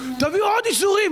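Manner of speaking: high-pitched shouting.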